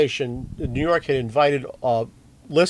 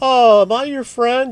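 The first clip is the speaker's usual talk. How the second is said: put-on play-acted drunk talk, slow and pitched up; 10 semitones higher, 7 dB louder than usual. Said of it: "like a drunk talks kind of thing".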